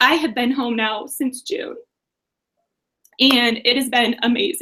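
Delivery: emotional, moved voice, fighting back tears. Speaker tells the audience about staying home with the kids, emotional. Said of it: "I get emotional at this point".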